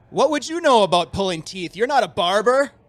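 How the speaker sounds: very loud, high, carrying shout. Voicing a traveler on the trail, shouting loudly at a companion. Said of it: "loudly kinda shouting".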